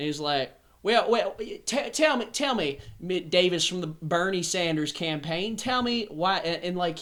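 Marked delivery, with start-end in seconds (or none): 0.8-6.4 Southern US way of talking. Retelling a phone call with a man from the South: imitating a Southern accent. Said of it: "he talked like this".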